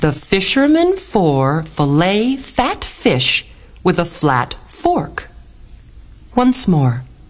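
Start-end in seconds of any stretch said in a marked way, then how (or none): 0.0-5.3 slow, deliberate, carefully spaced out word by word. Teaching listeners a tongue twister, trying it slowly first. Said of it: "let's try it slowly first".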